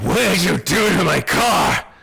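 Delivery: creaky, rough, menacing, threatening voice. Voicing a bleeding driver who looks at the player: menacing driver voice. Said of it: "with this look of awful menace in his eyes".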